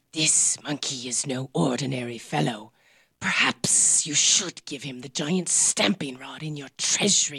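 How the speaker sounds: private, confiding aside in an undertone. Narrator reads the Dragon Queen speaking to the king, speaking low. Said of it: "then spoke low to the king".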